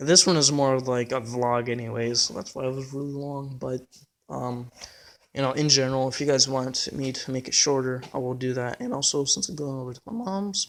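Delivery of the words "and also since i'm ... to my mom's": voice breaking mid-phrase, cracking up high. Vlogger telling viewers about going over to mom's, voice cracking. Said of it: "sorry for the twelve-year-old voice crack".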